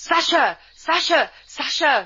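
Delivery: high, frantic shouting and calling out.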